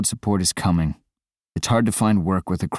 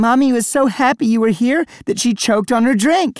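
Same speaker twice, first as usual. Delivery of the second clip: very high, shrill, loud shouting; 5 dB louder than usual. Cassie runs back up to Scott at her birthday party, shouting. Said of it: "shouted Cassie".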